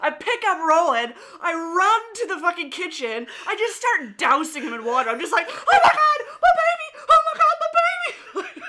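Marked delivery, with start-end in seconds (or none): 5.5-8.6 very high, shrill, frantic panicked screaming. Retelling dousing Roland in water in the kitchen, retelling screaming in panic. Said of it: "I started screaming bloody murder".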